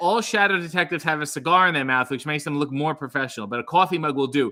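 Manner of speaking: ordinary delivery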